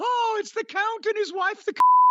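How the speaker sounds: very high, gasping, mock British voice.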